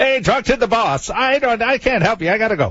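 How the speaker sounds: put-on very high-voiced Irish barman accent. Retelling what a disc jockey said to him, the speaker uses an Irish bartender accent. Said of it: "he sounds like an Irish bartender".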